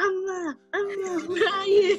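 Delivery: acted-out screaming. Retelling getting lost in the shopping mall and searching for her: retelling a scream. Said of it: "And then I'm screaming".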